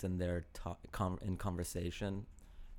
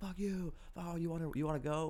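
put-on very high, very slow, drawn-out yell; 10 semitones higher than usual. Retelling how two frats yelled at each other on the hill, retelling a yell. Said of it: "they were just yelling at each other".

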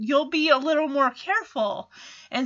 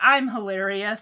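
put-on flat monotone voice, lower; 4 semitones lower than usual. Retelling Hilarious Hal's reply to a joke: Hilarious Hal monotone voice. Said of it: "This guy is, like, a monotone".

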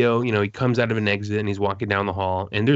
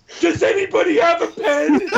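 mock shrieking, very high-pitched shrill yell; 4 dB louder than usual. Retelling how someone asked the whole room for a pen: imitating Legends screaming. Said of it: "Screamed it".

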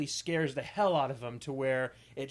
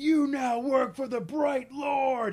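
high, shrill, loud, furious angry shout; 11 semitones higher, 5 dB louder than usual. Retelling what a game character yelled out: imitating an angry yell. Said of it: "he just yells out".

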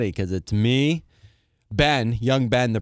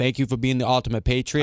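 usual speaking voice

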